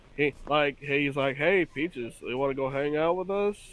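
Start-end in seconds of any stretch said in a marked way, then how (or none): 1.4-3.6 mock bored, flat, unemotive delivery. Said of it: "he just sounds so bored most of the time".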